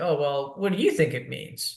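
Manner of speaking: ordinary talk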